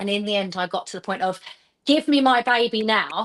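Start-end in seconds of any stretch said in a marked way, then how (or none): 1.9-3.3 put-on loud, slow, forceful, every word weighted. Retelling demanding the baby back: retelling a loud demand. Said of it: "like, really loud".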